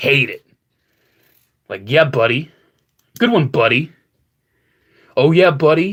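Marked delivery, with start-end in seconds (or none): 1.9-5.9 condescending, patronizing, belittling talking-down tone. Imitating people who say buddy: imitating a condescending tone. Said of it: "actually do mean to talk down to you".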